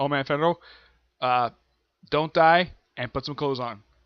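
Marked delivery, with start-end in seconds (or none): none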